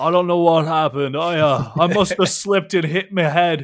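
loud, booming big-man voice. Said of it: "Horace the Bull ... comes forward and says".

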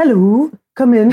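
very bad put-on Welsh accent. Greeting someone and inviting them in, in a very bad Welsh accent. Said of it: "I'm doing a very bad Welsh accent".

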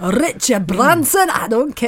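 bad, poorly attempted put-on Glaswegian accent. Retelling a thought they had while sitting at dinner: bad Glaswegian accent. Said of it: "that was a bad accent".

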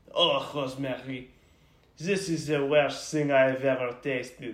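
put-on French accent. Speaker imitates how he would complain about the cooking, in a French accent. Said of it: "he's gonna say it in a French accent".

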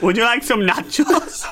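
clumsy, bad put-on Mexican accent, high pitch. Asked to do an accent for Mexican listeners, in a bad Mexican accent. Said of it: "Mexico. Do a shout out to all our Mexican listeners".

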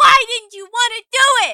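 very high, shrill, loud, accusing angry yell. Imitating a character yelling at another character: imitating Frankie yelling. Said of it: "just yelling at Maxwell".

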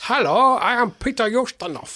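stagey celebrity voice, very high and very slow. Joking about a film choice, doing a Peter Ustinov impression. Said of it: "It would be Peter Ustinov".

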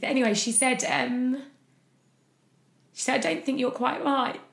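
tearful voice. Recounting a past conversation and becoming teary, crying. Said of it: "I don't know why I'm crying".

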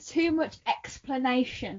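slow, hushed, very quiet, deliberate delivery. Unable to say a word while doing the show live; said slowly. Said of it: "I had to say that slowly".

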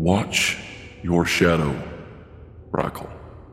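quiet, soft, hushed voice. Voicing a god who leans to a player's ear: speaking quietly. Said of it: "he says quietly so that only you can hear".

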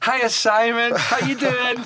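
very high, loud, drawn-out, acted-out call. Retelling being greeted across a crowd by Linda: imitating Linda shouting. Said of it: "all I hear is Linda shouting".

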